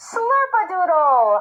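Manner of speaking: big, strong speaker voice, outside voice. Demonstrating how to use your outside voice, in an outside voice. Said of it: "your outside voice".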